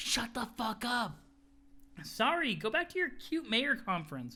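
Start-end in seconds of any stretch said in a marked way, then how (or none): 0.0-1.2 barely audible, excessively quiet hushed whisper. Voicing a character telling an eavesdropper off: excessively quiet whisper. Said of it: "have an excessively quiet".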